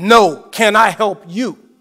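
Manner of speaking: very loud, stern, hostile, angry voice. Retelling how a man answered him at his car window, in a mock stern, angry voice. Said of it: "in a very stern and angry voice".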